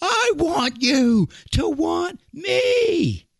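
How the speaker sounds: shrill, very high, loud yelling. Retelling how he took the mic from the ref, imitating someone yelling at a crowd. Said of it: "he's sitting there just yelling at the crowd".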